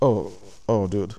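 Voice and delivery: dawning, stunned realization. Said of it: "One day we were like".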